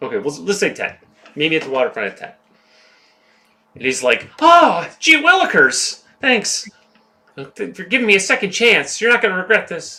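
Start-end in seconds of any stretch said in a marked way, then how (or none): 4.4-10.0 very high, squeaky-clean, wholesome, eager gee-whiz voice. Retelling how Paul thanks her for a second chance: overly wholesome gee-whiz Paul voice. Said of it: "that's how it sounded to me".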